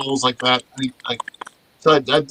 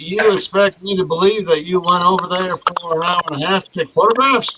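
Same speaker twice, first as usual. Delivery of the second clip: put-on pitched-up Louisiana-type accent; 5 semitones higher than usual. Retelling what a guy questioned him about heading back over the border, Louisiana-type accent. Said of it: "he's got this like Louisiana type accent".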